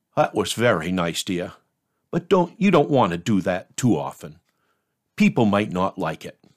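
close, confidential, confiding private tone. Retelling what an older churchgoer said after the sermon: imitating someone speaking quietly. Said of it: "she said very quietly".

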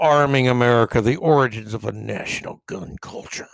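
dark, doom-laden, ominous announcer tone. Host announcing the title of a new book under discussion: ominous voice. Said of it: "the ominous voice I used".

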